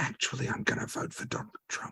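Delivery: hushed secretive whisper. Quoting a restaurant server who checked nobody could hear, lowered voice. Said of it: "they would lower their voice".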